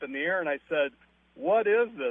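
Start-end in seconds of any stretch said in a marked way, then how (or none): 1.3-2.1 exasperated, fed-up, frustrated, higher pitch. Retelling a dinner exchange about smoke, the speaker reenacts his own frustrated question. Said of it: "I get a little frustrated".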